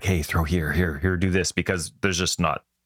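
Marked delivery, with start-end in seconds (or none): 0.0-1.5 put-on whisper. Retelling how coaches in the outfield call to players: imitating a coach whispering. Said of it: "the coaches are in the outfield a little bit whispering".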